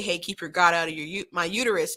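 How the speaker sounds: mock angry, mimicked angry tone. Retelling how someone replies to pro-life talking points: imitating someone angry. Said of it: "someone will get angry and say".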